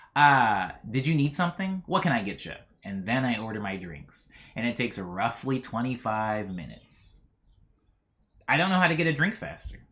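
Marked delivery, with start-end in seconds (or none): 0.1-2.5 weary, tired, put-upon, exasperated tone. Retelling how a bartender finally came over to take an order, imitating a tired, exasperated bartender. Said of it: "looking tired and exasperated and goes like".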